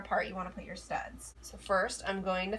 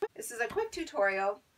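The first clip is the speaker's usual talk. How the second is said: voice cracking and breaking mid-line; 2 semitones higher than usual. Channel host introducing a do-it-yourself headboard tutorial, voice cracking. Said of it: "My voice just cracked".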